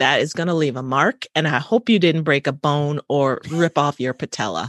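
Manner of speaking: plain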